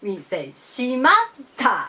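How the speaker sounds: shimatta said in middle-high pitch accent pattern. Explaining how to pronounce shimatta, middle-high pitch accent on shimatta. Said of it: "pronounced middle high style".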